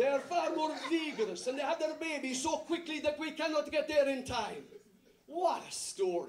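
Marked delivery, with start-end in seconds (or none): 0.0-4.6 put-on Italian accent, higher. A speaker retelling what the midwives replied, in a put-on Italian accent. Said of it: "they are more Italian. I can't help it".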